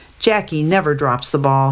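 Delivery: ordinary delivery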